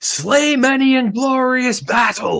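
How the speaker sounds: very high, loud shout. Voicing Hal as the others head off, shouting out after them. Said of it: "Hal just shouts out after them".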